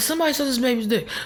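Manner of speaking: fast, casual, tossed-off delivery. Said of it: "the first time he was, like, saying it like".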